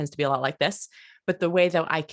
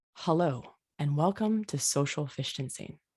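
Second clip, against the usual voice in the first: soft, warm, pleasant, warmed-up delivery; 6 dB quieter than usual. Leading a voice exercise for participants with mics off: warm voice. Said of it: "imagine something really nice that just warmed your voice".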